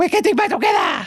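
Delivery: very high, failed put-on French woman's accent. Retelling what a player's wife said on his return: attempted French lady's accent. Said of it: "That's not a French lady's accent".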